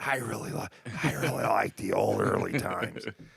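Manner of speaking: rough, creaky voice with false start mid-word. Joking that a stumble sounds like Joe Biden: Joe Biden voice. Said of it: "Now I sound like Joe Biden".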